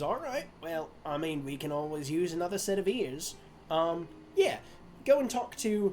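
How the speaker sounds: put-on Australian or New Zealand accent. Retelling what the gnome said, in an Australian-Kiwi accent. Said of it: "I'm doing Australian slash Kiwi accents for both of these".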